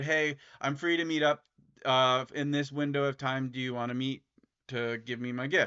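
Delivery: ordinary talk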